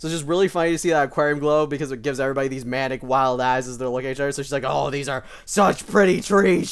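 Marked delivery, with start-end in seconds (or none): 4.6-6.7 slow, raised, playfully put-on mock menace. Describing a game character's glowy eyes, voicing her line: mock-menacing. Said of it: "she says menacingly".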